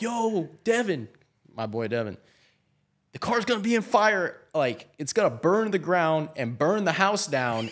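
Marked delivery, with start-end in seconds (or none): 0.0-4.4 mock high, rising, alarmed scream. Retelling jumping out of a car about to catch fire, screaming to a friend. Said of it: "I'm screaming like".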